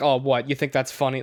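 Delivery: ordinary delivery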